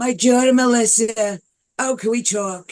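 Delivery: put-on voice with gritty, rough tone. Showing the roughness in the voice she hears in Joan Rivers. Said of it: "when I do Joan Rivers".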